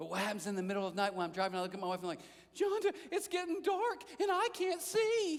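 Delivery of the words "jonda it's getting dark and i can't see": high, slow, drawn-out slacker drawl. Retelling what he said to his wife while driving at night, sounding like Shaggy. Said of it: "I sound like Shaggy from Scooby-Doo".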